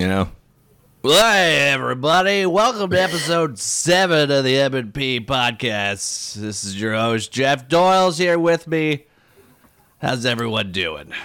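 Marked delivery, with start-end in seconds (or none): 1.0-11.1 loud, slow radio announcer voice. Welcome everybody to episode seven of your podcast in a Drew radio voice. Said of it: "Did you like my Drew radio voice?".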